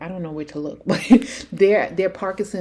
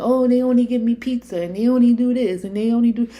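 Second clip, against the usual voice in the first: mock, high screaming, griping complaint; 6 semitones higher, 4 dB louder than usual. Criticizing aides for neglecting their work, imitating someone screaming. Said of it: "And you're screaming".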